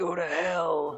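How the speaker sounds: menacing, growled demonic villain voice. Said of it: "I'm gonna try to growl as him".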